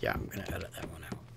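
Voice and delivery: fast, soft whispered aside.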